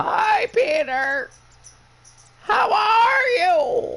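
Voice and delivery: very high, very slow, drawn-out witch voice. Imitating a friend's mom greeting Peter like a witch: imitating her mom as a witch. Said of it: "Can you stop being the Wicked Witch from the West".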